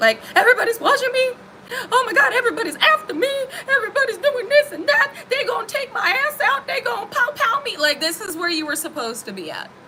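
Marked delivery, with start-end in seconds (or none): 0.4-7.8 very high, frantic, panicky paranoid voice. During a tarot reading, the speaker acts out someone's paranoia: mock-paranoid panicky voice. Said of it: "I'm sorry I have to say it in that voice".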